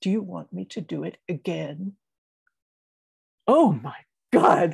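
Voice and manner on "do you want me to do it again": hushed, firm, pointed delivery. Retelling a confrontation on a bus with an angry passenger: quietly but firmly, retelling. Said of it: "said very quietly but firmly".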